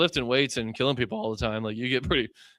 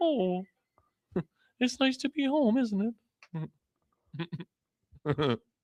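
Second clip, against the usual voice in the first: homey, pitched-up cartoon bear voice with a lilt; 8 semitones higher than usual. Retelling what he said on coming home, Winnie the Pooh voice. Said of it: "it had like a Winnie the Pooh kind of touch to it".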